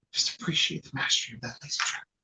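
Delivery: whispery golf commentator voice. Commentating a board game turn as a golf announcer: excited whispery golf announcer voice. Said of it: "like a golf announcer who's just, like, very excited but also kind of whispery".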